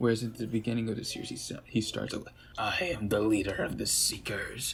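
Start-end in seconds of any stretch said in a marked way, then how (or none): 2.6-4.7 put-on tough robot-villain voice, tough-guy manner. Describing how the character starts out early in the series: tough guy Decepticon voice. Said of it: "tough guy Decepticon voice".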